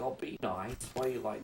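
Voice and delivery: mild, soft, gentle, hushed coaxing voice. Acting out the other speaker calming a yelling partner: soft-spoken imitation of partner. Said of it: "you'll be the soft-spoken one that's like".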